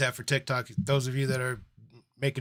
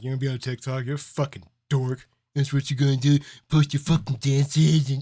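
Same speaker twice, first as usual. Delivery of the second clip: put-on mocking, ridiculing tone; 4 dB louder than usual. Imitating own self from two years ago making fun: imitating mocking ridicule. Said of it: "me from two years ago would make fun of me".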